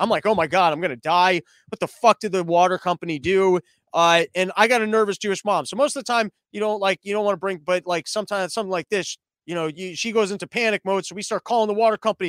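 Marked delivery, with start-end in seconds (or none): 0.3-3.6 put-on panicked freaking-out voice, louder. Retelling drinking purple tap water: imitating own panicked freak-out. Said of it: "So I start freaking out".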